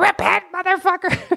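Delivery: shrill, top-of-the-lungs scream, pitched very high. Retelling a woman at an open mic: imitating someone yelling at top of lungs. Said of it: "she was yelling at the top of her lungs".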